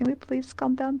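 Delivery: hushed, soft, gentle, coaxing pleading. Pleading in character with the unborn kid to calm down: pleading with an unborn child. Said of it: "I'm gonna plead with the kid".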